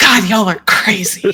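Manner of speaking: muttering it as a side remark. A player voices his confused character reacting to the group: muttering under breath. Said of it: "probably mutters under his breath".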